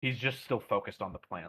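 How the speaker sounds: ordinary delivery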